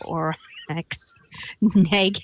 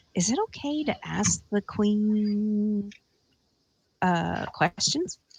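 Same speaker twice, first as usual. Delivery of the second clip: soft half-whispered aside with queen drawn out; 3 semitones higher, 5 dB quieter than usual. Voicing a character quietly asking whether to question the queen: half-whispering. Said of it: "kind of whisper to him".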